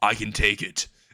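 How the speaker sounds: ordinary delivery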